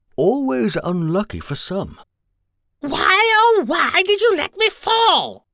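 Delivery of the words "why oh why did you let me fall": shrill, very high, accusing wailing shout. Narrating a woman who fell when her heel jammed, shouting at her companions. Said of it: "shouted Veruca".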